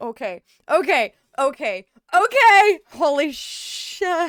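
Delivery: very slow, drawn-out, nervous excited jitters. About to press play on a trailer, excited panic. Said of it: "I'm panicking".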